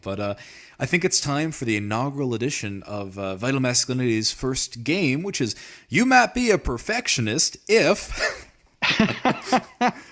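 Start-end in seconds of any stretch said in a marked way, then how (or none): 5.9-9.9 very high, slow, drawn-out fake bad Southern drawl. Starting a podcast's first game with co-host Brian, in a very bad Southern accent. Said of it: "I have a very bad Southern accent".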